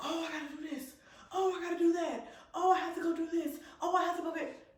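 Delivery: flustered, frazzled fussing. Retelling staff running around unprepared: imitating someone frazzled and rushing. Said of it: "looking at you running around all like".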